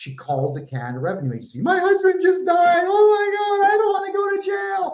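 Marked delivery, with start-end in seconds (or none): 1.6-4.9 mock very high, hysterical, frantic screaming. Retelling what a woman screamed when she called the Canada Revenue Agency, imitating her screaming. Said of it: "she's like, just screaming".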